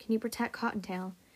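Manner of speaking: ordinary delivery, nothing marked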